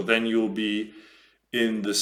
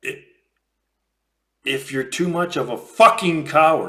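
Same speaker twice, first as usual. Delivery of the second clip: a little upset, frustrated, raised and pitched up; 6 semitones higher, 7 dB louder than usual. Explaining an argument, the speaker grows upset and frustrated. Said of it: "I'm getting a little upset".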